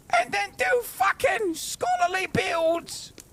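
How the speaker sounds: mocking posh British voice. Mocking chat's advice with a put-on voice. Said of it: "That's what you sound like".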